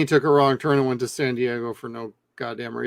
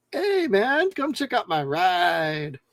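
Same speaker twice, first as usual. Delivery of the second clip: exaggerated put-on Mexican accent, swooping, slow, "ride" stretched; 6 semitones higher, 3 dB quieter than usual. Retelling what he said at the security installation, put-on Mexican accent. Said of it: "he was throwing on a Mexican accent".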